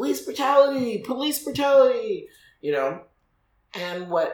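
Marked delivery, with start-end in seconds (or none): 0.0-2.3 mock very high-pitched, shrill yell. Recounting seeing a cop hit a man on the ground, retelling own yelling. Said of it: "I instantly just started yelling".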